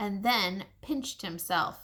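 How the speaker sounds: plain reading voice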